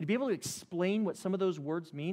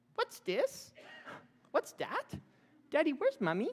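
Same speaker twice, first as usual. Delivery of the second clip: put-on very high, swooping, tiny child's voice; 10 semitones higher than usual. A father imitates his son Nathan asking questions, in his little high-pitched voice. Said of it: "in his little high-pitched voice".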